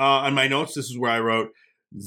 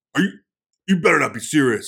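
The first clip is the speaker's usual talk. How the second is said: put-on tough-guy voice, faster; 4 dB louder than usual. Retelling Zak Bagans confronting someone, Zak Bagans put-on tough guy. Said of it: "puts on this tough guy thing".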